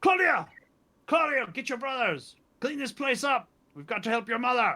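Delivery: loud, very high-pitched male yell. Game narrator voices a man shouting from upstairs to claudia, loud masculine shout. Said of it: "a shout from upstairs from a loud masculine voice".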